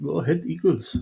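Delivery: put-on South African accent. Saying a team name that sounds South African: put-on South African accent. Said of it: "Nice accent".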